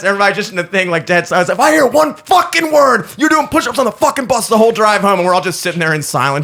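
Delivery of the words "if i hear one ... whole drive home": put-on loud, high furious screaming yell. Recounting a bus ride, speaker imitates a man screaming at them: retelling a scream. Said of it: "he's just screaming at us".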